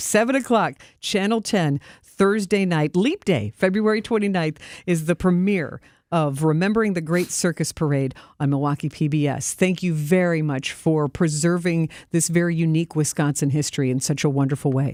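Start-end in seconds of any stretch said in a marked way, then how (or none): 0.0-3.0 slow, unhurried, deliberate dictation pace. Announcing a premiere time so viewers can write it down: saying it slowly. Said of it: "Saying it slow enough so you can write it down".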